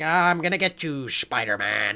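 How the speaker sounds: campy, cheesy, hammy sixties villain voice. Describing an earlier film's villain, imitating him: campy classic Green Goblin voice. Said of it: "cheesy, campy, this is the sixties, like, classic Green Goblin".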